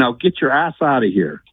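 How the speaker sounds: put-on New York accent. Retelling a story, the speaker quotes a police officer in a new york accent. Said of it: "And in New York's accent".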